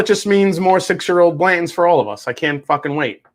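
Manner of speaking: sarcasm laid on a bit too thick, overdone enthusiasm. Talking about bourbon demand, saying what it means for everyone: sarcastic. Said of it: "Did that sound a little too sarcastic?".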